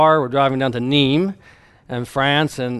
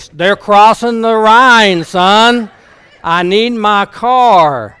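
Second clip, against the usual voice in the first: put-on booming voice, higher, louder and slower; 8 semitones higher, 10 dB louder than usual. Retelling Dr. Long's demand for his car, imitating his booming voice. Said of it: "he starts in that booming voice".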